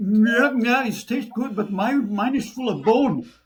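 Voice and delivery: mock loud, very high voice, talking through a full mouth. Retelling a party guest answering the host, imitating Thomas's full-mouth talk. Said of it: "he always spoke with food in his mouth".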